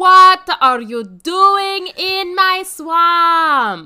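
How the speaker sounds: put-on very loud bellowing ogre voice, Eastern European accent, "swamp" stretched. Giving their best attempt at an impression on request, a bad Shrek impression. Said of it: "Why do you sound like Borat?".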